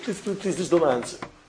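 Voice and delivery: ordinary talk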